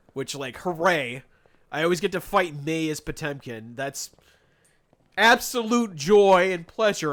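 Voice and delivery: dry, sarcastic show of delight. Recalling always facing the same opponent in the second round, say it sarcastically. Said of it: "I'm being sarcastic".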